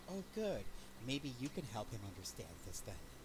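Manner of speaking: low muttered aside under the breath. Voicing a character saying a line to herself: muttered under her breath. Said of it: "so under her breath, she's gonna kinda say to herself".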